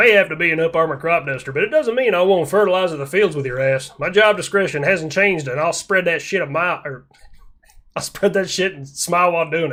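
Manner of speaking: put-on Texan accent, country English. Speaker retries a character line after the last take sounded Floridian, in a Texan accent. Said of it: "I'll try it with a Texan accent".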